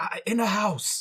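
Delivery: quiet whisper in a character voice. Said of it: "I will quietly whisper".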